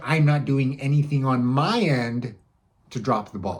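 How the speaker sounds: brief pause after "end". Sample voicemail to a seller who hasn't replied: small pause after 'my end'. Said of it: "you notice how I said that small pause uh, after my end".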